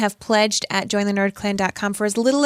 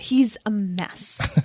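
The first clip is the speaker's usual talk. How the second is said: emphatic delivery, said with conviction; 3 dB quieter than usual. Repeating a line after being asked to say it with conviction. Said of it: "you gotta say it with conviction".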